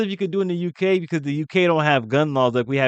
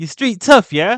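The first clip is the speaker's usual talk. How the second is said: put-on tough London street-kid accent; 2 semitones higher, 4 dB louder than usual. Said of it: "They be hilarious accent to me".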